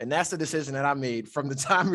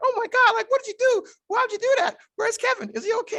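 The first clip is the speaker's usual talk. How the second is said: very high, frantic, freaked-out acted panic; 4 dB louder than usual. Retelling mom's reaction on the phone: imitating mom freaking out. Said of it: "mommy just starts fucking freaking out".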